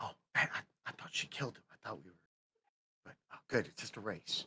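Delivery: very quiet, breathy, barely voiced whisper. Leaning down to speak privately to a companion: whispering. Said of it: "I leaned down and whispered to him".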